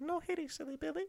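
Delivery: very high, small, weird squeaky little voice. Recommending the film Unwelcome, quoting the red cap in a weird little voice. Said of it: "they've got like a weird little voice".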